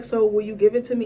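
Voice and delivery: plain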